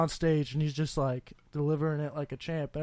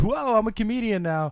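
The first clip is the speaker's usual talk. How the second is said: high, put-on, comedian-style radio-announcer voice; 5 semitones higher than usual. Mocking how new comedians talk on stage: imitating a beginner's radio voice. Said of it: "talk like how they think a comedian talks".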